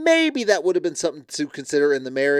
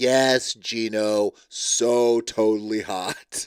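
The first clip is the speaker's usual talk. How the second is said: mock insincere tone, lower pitch; 5 semitones lower than usual. Retelling a reply from the show: imitating an insincere reply. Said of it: "And she's like".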